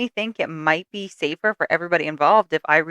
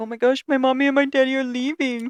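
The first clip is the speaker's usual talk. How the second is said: high, sad, mopey, sappy puppy voice; 7 semitones higher than usual. Voicing what the dog seems to say when the owners leave: mock sad, sappy dog voice. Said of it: "you all sad and sappy".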